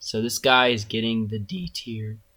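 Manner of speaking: breaking, cracking voice, mid-sentence. Ranking a shark in a tier list, giving it d tier, voice cracking. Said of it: "Please ignore that voice crack".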